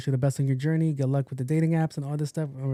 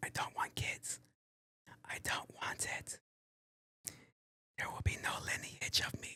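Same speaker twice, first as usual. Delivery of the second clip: hushed, breathy whisper right under the breath. Answering a submitted question about not wanting kids, whispering. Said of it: "Why am I whispering?".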